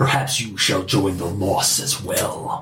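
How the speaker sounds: low, weird, merged-sounding creature voice. Storyteller voicing the creature in the tale: weird conjoined amalgam creature voice. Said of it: "in the creature's weird conjoined amalgam voice".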